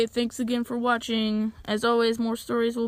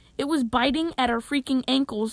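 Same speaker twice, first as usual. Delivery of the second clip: usual speaking voice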